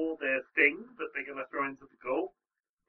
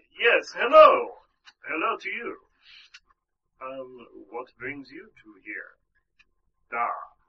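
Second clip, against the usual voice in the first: loud, failed, unconvincing attempt at Russian accent; 8 dB louder than usual. Voicing a character who greets the player, attempting a Russian accent. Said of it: "I'm trying to find a Russian accent".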